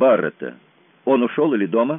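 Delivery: ordinary delivery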